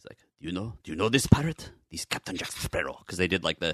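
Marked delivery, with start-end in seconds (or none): 0.4-3.0 put-on heavy lisp, Spanish accent. Imitating an actor's line from a pirate movie: Javier Bardem impression. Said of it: "the super lispy Spanish".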